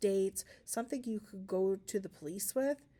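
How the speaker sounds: plain reading voice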